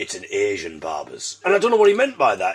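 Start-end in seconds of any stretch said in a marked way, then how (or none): 0.0-1.4 very low, slow, hushed, under-the-breath voice. Retelling what a man said when asked about a barber's, imitating his lowered voice. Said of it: "he sort of lowered his voice and went".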